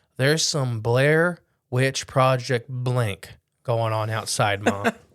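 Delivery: ordinary delivery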